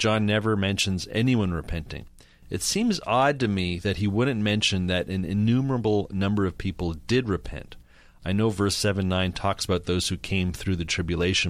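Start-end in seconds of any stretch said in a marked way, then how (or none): none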